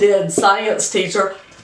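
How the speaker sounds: ordinary talk, nothing marked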